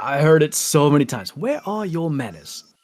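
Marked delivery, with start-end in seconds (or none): 1.3-2.6 put-on British accent, higher, quieter. Quoting a relative who often babysat the speaker as a child: British accent. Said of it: "Just in the British accent, huh?".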